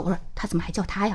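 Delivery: low-voiced aside. Retelling what she said to the person beside her, quietly aside. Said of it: "我就跟旁边的人小声说".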